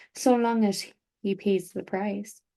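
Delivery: ordinary delivery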